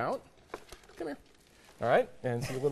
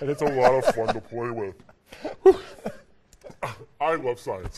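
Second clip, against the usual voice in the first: voice dropped a little deeper, somewhat loud; 3 semitones lower, 5 dB louder than usual. Demonstrating how a gas makes the voice go the other direction: voice a little lower. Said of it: "my voice goes the other direction and it sounds a little bit lower".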